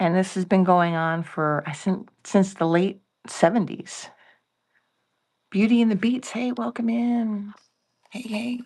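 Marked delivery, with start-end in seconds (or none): 6.3-8.6 whispering, higher and slower. Welcoming listeners while the household is still asleep, whispering. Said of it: "I'm whispering".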